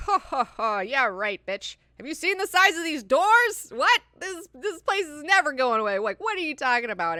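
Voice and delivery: high, put-on scornful, jeering scoff. Speaker retelling a crowd laughing at a dancing man, imitating mocking laughter. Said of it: "everybody starts laughing at him".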